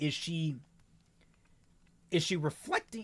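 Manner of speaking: voice cracking, breaking high in the middle. Discussing a story's main character with others, the speaker's voice cracks. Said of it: "Oh, voice crack there".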